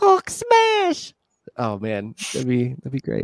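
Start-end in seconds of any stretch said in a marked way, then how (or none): 0.0-1.1 very high, tiny, squeaky little voice. Joking about shrinking the Hulk with Pym particles, the speaker does tiny-voiced Hulk. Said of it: "With a tiny little voice".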